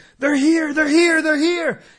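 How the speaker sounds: high, loud, freaked-out panicked yelling.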